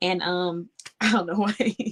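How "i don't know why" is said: laughing and giggling through the words. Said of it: "You already know why I'm laughing".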